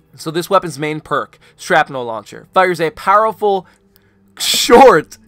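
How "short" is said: heavy stress on the word "short". Reading a weapon perk description aloud to the audience, stress on short. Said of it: "emphasis on the word short".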